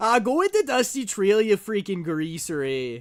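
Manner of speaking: over-the-top, exaggerated Canadian accent. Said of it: "That's the sexiest a Canadian has ever sounded".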